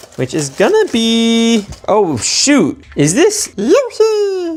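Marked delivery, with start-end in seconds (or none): 3.0-4.6 very high little cartoon creature voice. Unboxing Mario toys, speaker opens the next pack with a Yoshi impression. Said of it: "That was my impression of Yoshi".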